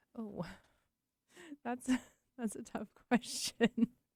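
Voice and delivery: talking through laughter. Answering a question about attuning to others' emotions, laughing while talking. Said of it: "'cause you're laughing".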